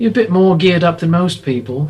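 attempted Scouse accent. Voicing a woman character speaking to the group, attempting a scouse accent. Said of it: "I always want to try the accent".

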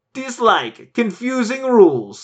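bad Norwegian accent, pitched very high. Reading a reviewer's complaint aloud: terrible Norwegian accent. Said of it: "That's a terrible Norwegian accent".

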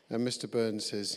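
plain

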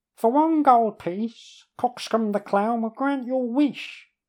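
very high, squeaky ventriloquist voice, lips barely moving. Narrator reads a jester at an inn table, in a squeaky voice. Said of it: "the jester says in a squeaky voice".

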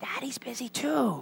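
tiny, high, whispered little voice. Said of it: "And still whispering, the little voice said".

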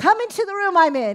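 high, loud shouted call from a distance. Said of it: "he's shouting back at me".

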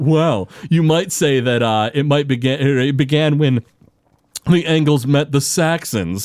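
put-on highbrow, very pretentious, self-important, lofty tone. Retelling a boardroom scene, quoting an executive: imitating a pretentious man. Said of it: "this pretentious, super pretentious dude is like".

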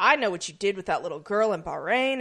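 ordinary talk

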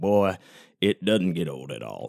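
put-on southern accent. Show host joking with new listeners, fake southern accent. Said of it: "I talk in a southern voice".

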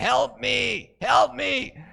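eerie, creepy, rasping, creaky high-pitched voice. Retelling a tv commercial, the speaker quotes the voice from the basement: retelling a creepy basement voice. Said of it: "she hears this really creepy voice down there saying".

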